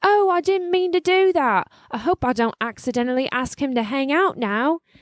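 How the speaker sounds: awful put-on British accent. Retelling what a man said after his Alexa went wrong, in a bad British accent. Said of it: "sorry about that awful accent".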